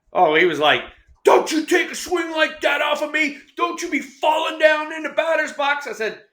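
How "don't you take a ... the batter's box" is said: put-on, shrill, very high scolding scream. Retelling what a player screamed at him after a swing, retelling a scream. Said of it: "he starts screaming at me".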